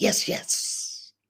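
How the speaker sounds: two rapid "yes" back to back. Leading listeners to repeat after him, quick double yes. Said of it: "say it twice fast".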